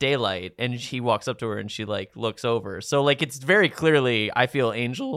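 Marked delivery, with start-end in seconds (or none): 4.3-5.2 voice cracking mid-line on the words. Discussing a TV episode with another speaker, voice cracking. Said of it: "My voice just cracked".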